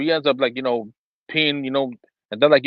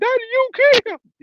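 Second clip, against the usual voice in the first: put-on little child voice, much higher, slower; 3 dB louder than usual. A father retells his son's words after falling, in the son's little voice. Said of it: "my son had that little voice".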